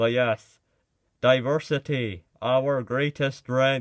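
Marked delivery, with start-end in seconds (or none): 1.2-3.8 loud, very robotic, mechanical voice. Expecting hostile comments, repeating a slogan in a very robotic voice. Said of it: "in very robotic voice".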